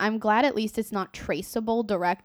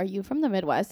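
ordinary talk

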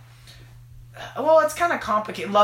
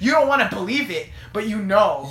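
normal talking voice

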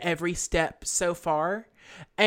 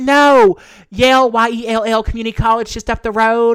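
thick put-on East Texas accent, louder; 4 semitones higher, 12 dB louder than usual. Speaker retells answering a man who asked about Yale, thick East Texas accent. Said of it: "I just put on my thickest East Texas accent".

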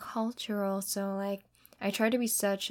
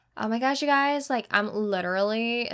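put-on American accent, louder; 2 semitones higher, 6 dB louder than usual. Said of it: "fake an, like, a, like, American accent".

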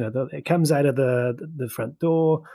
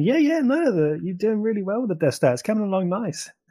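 put-on laid-back voice, much higher; 8 semitones higher than usual. Imagining how a film character would talk, imitating someone chilled out. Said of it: "like he's kind of chilled out just a little bit".

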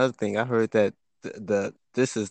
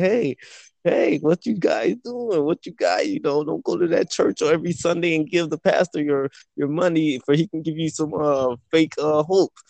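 imitated screaming, much higher pitch; 7 semitones higher, 4 dB louder than usual. Retelling how the Israelites were screaming to the people, imitating someone screaming. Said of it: "was screaming to the people".

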